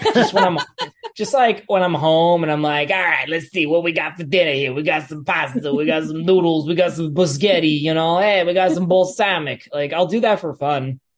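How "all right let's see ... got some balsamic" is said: accent from Long Island. Showing the voice used at home for fun: a Long Island accent. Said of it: "I do the Long Island accent a lot for fun".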